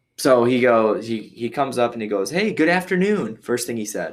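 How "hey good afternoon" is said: acted-out bright, cheery, chipper voice, very high pitch.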